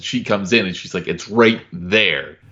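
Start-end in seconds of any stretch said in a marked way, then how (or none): 1.1-2.2 cross, plainly annoyed, angry, fed-up tone. Retelling Maxine's reply to Kenny about the phone: imitating Maxine angrily. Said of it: "that was me putting my emotion into it. I'm very angry with him".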